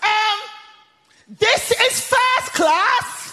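acted-out very high, drawn-out shout at full stretch. Retelling a woman on a plane announcing something: imitating someone shouting. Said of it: "at the top of her voice, she shouts".

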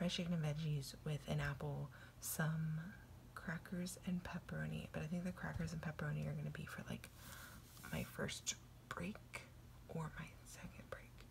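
soft, hushed whisper. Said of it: "Sorry I'm being quiet. Cheyenne's asleep over there".

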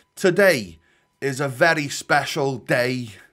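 put-on slow, light, drawn-out intro voice with slight Scouse accent. Doing another creator's intro as an impression: imitating Matt H D Gamer's intro. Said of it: "Shall I do his intro?".

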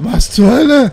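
high, loud shocked outcry.

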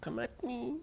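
mocking, high-pitched voice.

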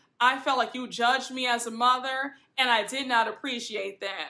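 ordinary delivery

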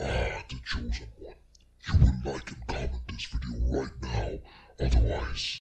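echoey demonic voice. Tutorial testing a larger room size on the effect, echoey demonic voice. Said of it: "the demonic voice".

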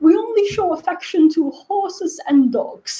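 put-on British old woman voice. Trying the british accent and sounding like a grandma: put-on british accent. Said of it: "whenever I try to do the British accent, I sound like a British grandma. I was like".

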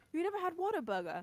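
put-on British accent. Repeating another speaker's line back to them: imitating a British accent. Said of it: "The European genes are kicking in".

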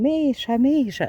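alarmed, frightened, high-pitched shout. Retell how a woman walking in the forest with her daughter met a naked man, retelling a scream. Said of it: "почала кричати".

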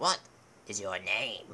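put-on deep, low, pitch-shifted old man voice. Dubbing the Bridge of Death scene, questioning the knight: Bridgekeeper voice, artificially deepened. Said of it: "Look, there's the old man from scene 24. ... He is the keeper of the Bridge of Death. ... I will be using a pitch changer to just artificially deepen my voice while I do random stuff".

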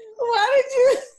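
high, loud, breathless laughter, gasping.

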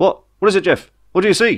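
panicky, panicked, very high-pitched voice. A narrator voices a crewman on a ship's bridge asking what his companion sees, panicked. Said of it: "he asked in panic".

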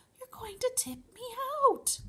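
hushed whisper. Sitting in the giant's turning ear, the passenger speaks to him, whispering. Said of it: "Sophie whispered".

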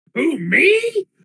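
very high, squeaky, loud, goofy, funny beast voice. A player voicing Splug answering the group, in a funny Splug voice. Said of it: "And with such a funny voice".

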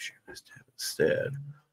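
soft, unvoiced whisper.

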